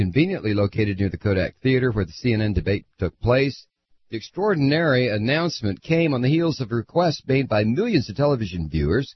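plain

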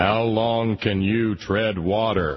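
big, heavenly voice calling down from above. Retelling a preacher's joke, delivering the punchline in a big booming voice. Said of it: "a big booming voice came down and said".

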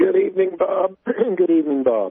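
gargly frog-in-throat voice. Caller greeting the radio host on air, with a frog in the throat. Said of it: "sorry about the gargle and the frog".

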